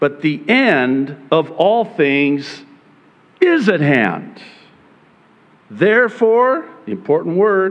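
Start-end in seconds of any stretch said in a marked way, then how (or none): 0.0-4.4 is given heavy, pointed stress. Rereading a passage aloud to make a point, stress on "is". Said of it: "I'm placing the emphasis on is for a reason".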